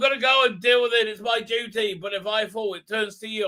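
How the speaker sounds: put-on broad, thick East London accent, laid on. Retelling what a guy says before facing off with someone, thick East London accent. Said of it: "the Chinese people with thick East London accents".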